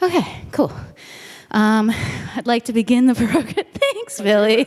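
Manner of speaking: short of breath, winded, catching breath. Starting a program just after running up and down stairs: out of breath. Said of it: "so I need to catch my breath".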